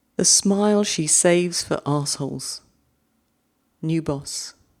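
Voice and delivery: English accent on the whole line. Reading a short poem a second time, the british way: english accent. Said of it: "I'm going to have to say with an English accent".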